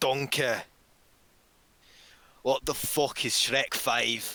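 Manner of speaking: big cartoon ogre voice. Retelling a joke scene, answering another character, Shrek voice. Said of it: "And then Shrek's like".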